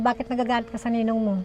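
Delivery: normal talking voice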